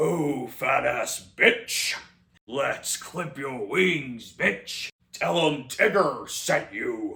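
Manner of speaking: slow, drawn-out cartoon tiger voice. Acting out imagined lines from the dark movie version: Tigger voice. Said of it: "his lines are basically like this".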